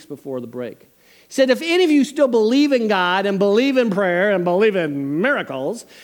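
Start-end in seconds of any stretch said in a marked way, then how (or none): 1.5-5.9 loud tone dripping with sarcasm. Retelling a professor's challenge to believers in class: imitating a sarcastic professor. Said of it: "hear the sarcasm dripping".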